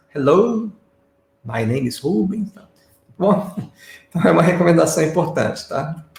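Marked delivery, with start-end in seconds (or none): 0.2-2.6 slow teacher-like speech, heavily paused between words. Imitating an English teacher introducing himself: slow, paused speech. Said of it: "daquela maneira bem pausada".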